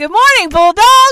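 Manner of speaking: ear-splitting yell, very high, very loud, excited. Reenacting how she greeted everyone, retelling a loud shout. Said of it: "look at how the audio spiked on that".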